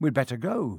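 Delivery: ordinary delivery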